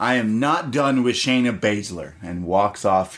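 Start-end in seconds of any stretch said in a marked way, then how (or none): 0.0-2.1 mock heated, cross, angry tone. Retelling a wrestler storming past an interviewer: imitating Io Shirai's angry tone. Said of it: "She walks by in an angry tone".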